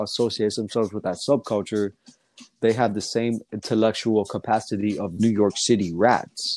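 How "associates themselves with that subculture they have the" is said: ordinary delivery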